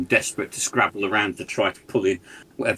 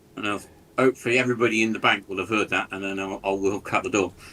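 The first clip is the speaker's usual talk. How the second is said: plain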